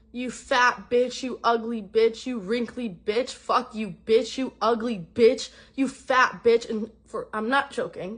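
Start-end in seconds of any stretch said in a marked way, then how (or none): 0.2-6.7 mock loud, relentless, nonstop screaming. Retelling a scene at a cliff spot: imitating a boyfriend screaming insults. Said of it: "five minutes screaming at me".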